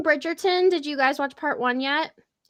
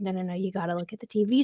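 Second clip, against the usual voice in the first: put-on grown man talking like a child; 6 semitones lower, 5 dB quieter than usual. Retelling how the husband keeps calling her to the tv: imitating husband acting childish. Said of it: "acts like such a fucking child".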